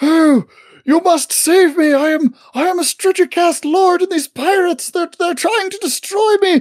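shouting. A narrator voices a character calling across to another ship, yelling. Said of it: "He's like yelling at the steamers".

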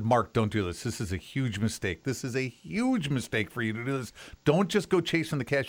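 mock pleading, begging appeal. Retelling begging someone in the car not to leave: imitating own past begging. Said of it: "I begged him".

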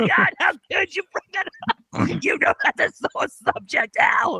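mock outrage, shouted high and offended.

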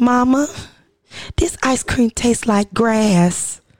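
put-on old-fashioned, period-drama style Southern accent. Retelling what he told his mama, sounding like The Color Purple. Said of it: "Why you sound like you from the color purple?".

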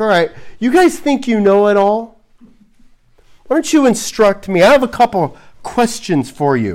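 openly sarcastic, challenging tone. Retelling God's reply to people who think they know it all: imitating God being sarcastic. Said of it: "God's being sarcastic".

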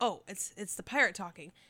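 plain

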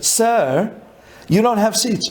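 put-on European accent. Retelling what the agent said to him, imitating a European accent. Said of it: "with a European accent".

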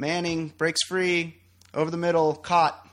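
mock flat, monotone, almost yawning sportscaster delivery. Imitating how an announcer called a Super Bowl play, flat monotone call. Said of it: "He's so monotone. ... It almost sounded like he was yawning".

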